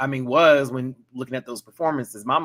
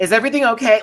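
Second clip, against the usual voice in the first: mock very high, raised voice, faintly irritated; 10 semitones higher, 7 dB louder than usual. Retelling Rue asking a contestant if everything is okay: imitating Rue sounding almost annoyed. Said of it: "Rue sounded almost annoyed when she was asking".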